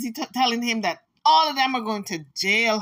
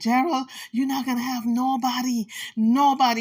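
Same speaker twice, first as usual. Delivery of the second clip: put-on whisper. Retelling what a woman told gerald to scare him: imitating someone whispering. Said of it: "And she's whispering".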